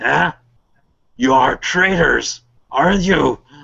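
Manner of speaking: enraged, wrathful, accusing orc warlord voice. Voicing an enraged orc leader confronting the players: enraged orc warlord. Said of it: "so big is his wrath".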